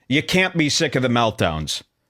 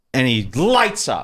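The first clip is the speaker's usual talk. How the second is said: ordinary talk, nothing marked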